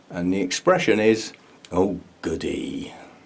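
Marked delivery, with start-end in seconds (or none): 1.7-2.9 put-on weary, low, soft sighed line in English accent. Giving a film quote for listeners to guess, the speaker says it with a sigh. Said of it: "like a sigh".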